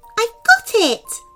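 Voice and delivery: joyful cry. The lemming fairy holds the caught shell high, crying out happily. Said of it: "the lemming fairy cried happily".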